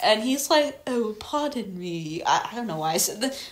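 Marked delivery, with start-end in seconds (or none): 0.9-2.2 soft, lovely, charming little voice. Praising the actor voicing Paddington, lovely, charming Paddington voice. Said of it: "such a lovely, charming voice".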